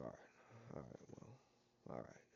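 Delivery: very quiet, hushed, grumbling mutter under the breath. Retelling a man walking away after a refused handshake: imitating a grumbling mumble. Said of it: "He's just grumbling, mumbling".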